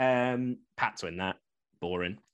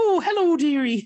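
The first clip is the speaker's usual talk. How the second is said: put-on high-pitched, loud, chirpy old lady voice; 10 dB louder than usual. Making game picks, slipping into a Mrs. Doubtfire voice. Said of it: "That sounded like Mrs. Doubtfire then".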